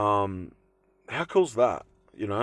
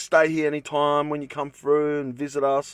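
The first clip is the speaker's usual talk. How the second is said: ordinary talk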